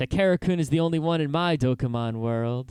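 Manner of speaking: mock deadpan, perfectly serious delivery. Retelling a character's line, imitating a perfectly serious tone. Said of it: "she says it perfectly seriously".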